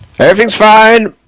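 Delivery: very high, loud, far-carrying shout. Answering a voice from above on the ship: shouting up. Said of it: "I'm gonna shout up".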